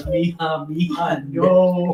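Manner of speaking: crying out. Retelling a mother's cry as her child fell: imitating a mother's cry. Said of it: "that mother's cry of".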